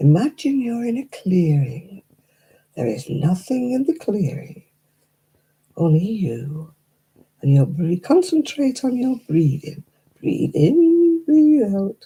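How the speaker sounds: put-on calm, lulling, sing-song relaxation-tape voice. Mocking a relaxation voice telling listeners to breathe, imitating a soothing voice. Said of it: "they had a soothing voice".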